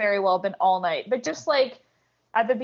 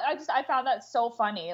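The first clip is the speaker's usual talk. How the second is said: plain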